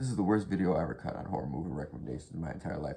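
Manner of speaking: very fast, rattled-off ranting delivery. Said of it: "really fucking fast".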